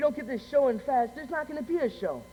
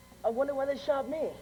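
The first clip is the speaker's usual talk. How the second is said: plain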